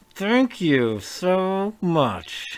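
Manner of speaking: forced through clenched teeth, very slow. Narrating a character who takes a parcel from the crew: said through gritted teeth. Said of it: "she says through gritted teeth".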